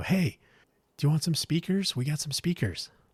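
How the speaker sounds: put-on high, shouted yelling. Retelling a stranger at a traffic light calling from a van: imitating a guy yelling. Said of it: "Guy yells out the window".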